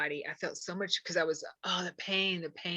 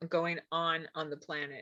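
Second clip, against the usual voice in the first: usual speaking voice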